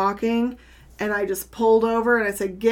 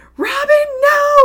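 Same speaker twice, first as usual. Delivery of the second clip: very high, very loud, shrill scream; 10 dB louder than usual. A parent retells the moment her child ran for the ball, retelling screaming at her child. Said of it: "I'm screaming at my child".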